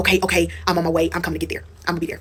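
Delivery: acted panicked voice. Retelling a phone call after a fall, acting out him: acting out someone panicking. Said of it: "He's panicking".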